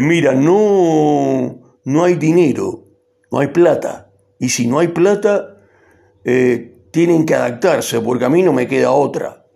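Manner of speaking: affected, pompous resonant voice, puffed up, drawn-out "no". Imitating how Milei now talks about money: pompous resonant Milei voice. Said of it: "ahora tiene una voz que trabaja con un resonador engolado que dice".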